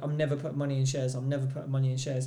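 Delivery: ordinary delivery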